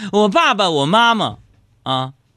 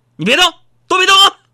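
put-on, loud, very high-pitched, sudden yell; 9 semitones higher, 5 dB louder than usual. Speaker retells mom shouting over the phone as the call ends, retelling a loud shout. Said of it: "大喊一声".

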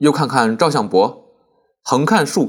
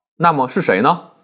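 ordinary delivery

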